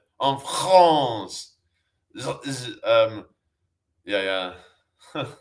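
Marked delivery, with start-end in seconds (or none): 0.2-1.6 thick French accent, phlegmy, hawked from the throat. Showing how the French pronounce words: phlegmy French pronunciation. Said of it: "phlegmy kinda".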